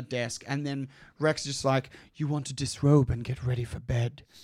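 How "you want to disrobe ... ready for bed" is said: put-on whisper. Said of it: "whispering in her ear".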